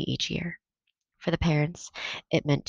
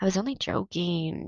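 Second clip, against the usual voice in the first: words said on a groan; 3 semitones higher than usual. Reading a story aloud, a boy answering his warning mother: groaning. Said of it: "Jonas groaned".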